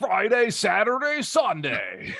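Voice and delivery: very high monster truck ad announcer voice. Continuing a joke ad for the summit: Monster Jam commercial announcer voice. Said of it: "it's the Monster Jam commercial guy".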